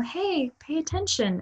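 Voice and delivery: put-on soft sweet tone. Describing an inner urge, the speaker voices how it starts, mock soft and sweet. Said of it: "it always starts soft and sweet".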